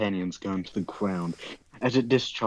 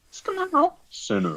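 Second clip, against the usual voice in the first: very high-pitched storytelling character voice. Reading a story aloud, voicing the cloaked figure in a high-pitched voice. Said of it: "you doing this high pitched voice is fucking up your mic".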